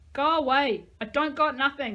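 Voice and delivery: very loud, high yell, as if from inside. Narrator reads a woman at the window telling Max to go away, yelling. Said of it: "She yelled".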